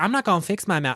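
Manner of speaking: put-on Southern twang. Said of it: "Southern twang".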